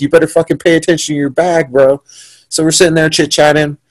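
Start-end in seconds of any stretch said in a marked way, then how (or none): 0.0-2.0 imitated yelling, higher. Retelling trash talk yelled at a rival from the cage: retelling a yell. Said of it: "I start yelling, I start talking shit".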